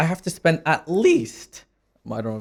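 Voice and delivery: voice breaking and cracking mid-sentence. Explaining how they expected to start out in trading, voice cracking. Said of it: "voice crack, my bad".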